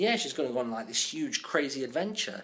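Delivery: normal talking voice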